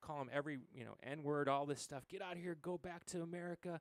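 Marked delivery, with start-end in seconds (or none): 2.1-3.8 put-on man's yell, higher. Retelling how a man outside a restaurant yelled: imitating a man yelling. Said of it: "the guy starts yelling".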